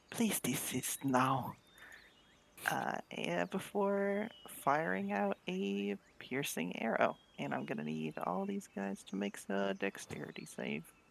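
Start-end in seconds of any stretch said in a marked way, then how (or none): 0.1-1.5 very quiet, hushed, barely above a breath. Speaking in character, telling enemies to stop before firing an arrow: very quiet. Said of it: "very quietly say".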